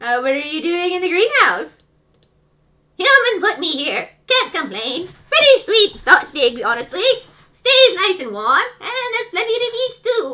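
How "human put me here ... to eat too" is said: put-on pitched-up goat voice like an old grandma. Asked what it is doing in the greenhouse, the speaker plays Goat in a grandma-like voice. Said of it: "You sound like a grandma".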